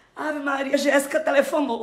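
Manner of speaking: nervous, anxious. Speaker too nervous to talk, telling the senhora who phoned: nervous. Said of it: "Tô nervosa que eu tô".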